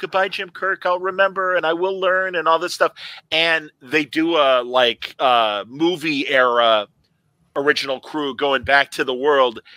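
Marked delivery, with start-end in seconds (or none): 0.0-2.4 acted, tearful, weepy, high crying voice. Retelling a story where a woman says goodbye: imitating someone crying. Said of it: "she's crying".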